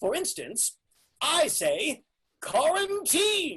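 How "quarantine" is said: on-air radio broadcast announcer voice. Showing a personalized way of saying the title: announcer voice. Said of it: "find your announcer voice".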